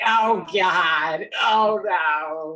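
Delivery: put-on very slow, whiny American accent, "no" drawn out. Retelling how the villain Hans Gruber pretends to be American: Hans Gruber's whiny American voice. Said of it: "a whiny American guy".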